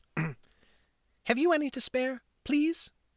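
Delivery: small, timid, very high, slow tiny voice. Reading a novel aloud, a street child begging for food: tiny voice. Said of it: "he said in a tiny voice".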